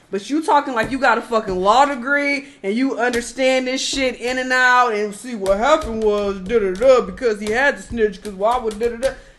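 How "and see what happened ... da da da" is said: fake dumb-sounding, mocking voice. Mocking someone who lectures others about the law, put-on stupid voice. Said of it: "put on like a stupid voice".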